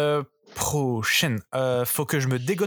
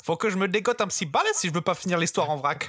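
French-dubbed cartoon donkey voice; 4 semitones higher than usual. Doing a voice for friends who asked for it: French dub of Murphy's voice. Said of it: "je vais faire la voix française".

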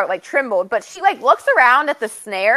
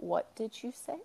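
deadly calm, dangerous near whisper; 19 dB quieter than usual. Retelling a book scene where she questions him: deadly calm. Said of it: "the deadly calm here where she's like".

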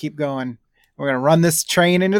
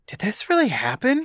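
high-pitched stage half-whisper; 8 semitones higher than usual. Retelling what a young girl asked her friend at an ad: imitating a half-whisper.

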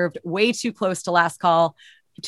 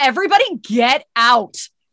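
put-on stern teacher voice, higher and louder; 6 semitones higher, 4 dB louder than usual. Speaker acts out what they shouted, in a put-on stern teacher voice. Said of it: "this like stern teacher voice".

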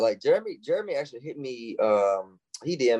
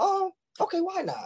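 put-on very high, warm girl's voice. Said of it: "incentive to be like".

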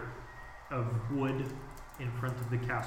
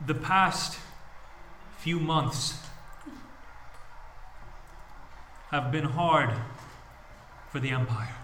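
big, booming voice projected to carry far; 3 semitones higher, 3 dB louder than usual. Lionel steps forward above the steps to address the crowd: Lionel's booming voice. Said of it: "And his voice is booming".

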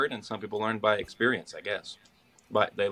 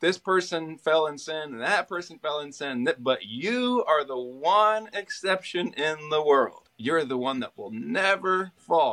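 slow, high, teasing sarcastic delivery; 6 semitones higher than usual. Recalling a man who often said this in college, retelling a sarcastic jab. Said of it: "say it sarcastically".

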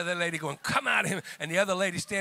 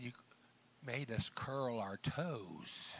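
put-on southern drawl, lower and quieter; 6 semitones lower, 12 dB quieter than usual. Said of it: "with that Southern accent that I love dearly".

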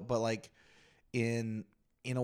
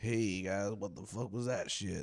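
terrible, calm, cool, offhand, unbothered voice; 3 semitones lower than usual. Imagining a comedian strolling on stage after the opener: terrible Dave Chappelle impression. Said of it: "terrible Dave Chappelle".

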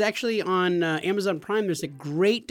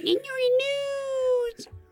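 grating, annoying voice, very high and drawn out. Tell Garrett what you hear all day at work, mimicking Garrett's annoying voice. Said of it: "in your annoying voice saying".

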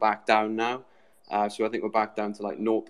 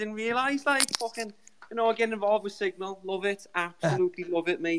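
put-on Scouse accent, much higher pitch; 10 semitones higher than usual. Guest joining the show, joking that everyone is doing Scouse accents, in a put-on Scouse accent. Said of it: "I won't do the whole show in this accent".

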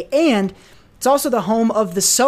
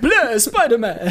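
cheesy, deliberately bad vampire voice; 2 semitones higher than usual. Joking about Morbius showing up in the movie, Morbius bad vampire impression. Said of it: "do like a bad vampire impression".

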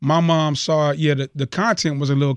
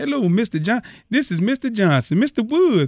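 mocking put-on celebrity voice, higher-pitched; 7 semitones higher than usual. Retelling a radio DJ's on-air bit: imitating Magic Johnson. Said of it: "he would mimic Magic Johnson".

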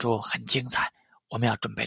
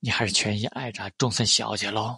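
ordinary delivery, nothing marked

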